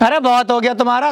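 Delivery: plain reading voice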